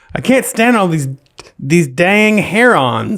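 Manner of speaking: mocking put-on voice. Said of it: "Did I mock him enough?".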